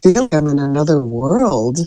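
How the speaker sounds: put-on whisper. Telling a short story, quoting what a friend whispered before leaving: retelling a friend's whisper. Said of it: "she came over and whispered to me".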